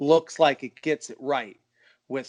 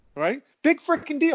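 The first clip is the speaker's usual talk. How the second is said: put-on angry yelling, higher pitch; 12 semitones higher than usual. Retelling what an upset friend said on the phone: imitating someone yelling angrily. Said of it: "And he's just yelling".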